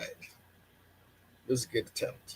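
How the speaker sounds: slow, sultry, sexy voice. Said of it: "Is that your sexy voice".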